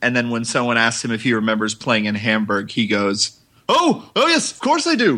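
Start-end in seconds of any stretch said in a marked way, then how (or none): 3.7-5.2 put-on very high, slow Scottish accent. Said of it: "which is why he has a Scottish accent".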